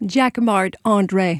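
put-on slow speech with American accent and Americanized pronunciation.

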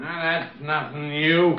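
put-on drunk. Answering a request to come in and talk, drunk. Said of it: "You're drunk again".

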